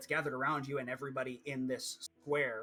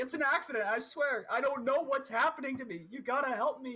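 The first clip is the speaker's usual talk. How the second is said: shrill, very high, desperate begging scream; 11 semitones higher, 4 dB louder than usual. Voicing a man begging captors to let him go: screaming and begging. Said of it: "he's screaming at them like".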